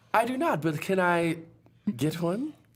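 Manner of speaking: put-on British accent. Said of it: "all of a sudden a British accent".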